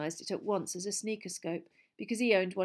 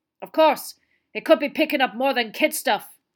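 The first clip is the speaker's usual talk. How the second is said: very loud, raised growling voice; 5 semitones higher, 12 dB louder than usual. Talking about his oversensitive sneakerscope, he adds a final remark in a growl. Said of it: "he added in a growl".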